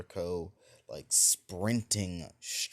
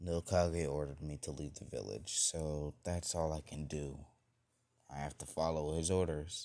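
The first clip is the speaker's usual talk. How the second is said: put-on sad tone; 4 semitones lower, 5 dB quieter than usual. Retelling a story where a character says he must leave, put on a sad tone. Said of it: "says with a very sad tone in his voice".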